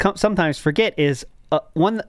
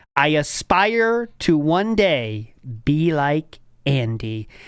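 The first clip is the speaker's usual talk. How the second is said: slow, deliberate, careful reading of each word. Reading out a quoted chat message for others: reading slowly. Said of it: "I'll read this slowly for you here".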